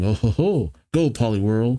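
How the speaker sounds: usual speaking voice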